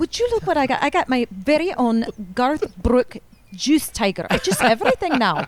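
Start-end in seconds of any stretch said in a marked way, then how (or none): 0.0-4.3 put-on good, convincing Scottish accent. Quoting the mother from So I Married an Axe Murderer, in a Scottish accent. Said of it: "That's a good Scottish accent".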